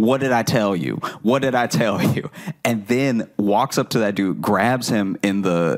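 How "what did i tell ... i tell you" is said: ordinary talk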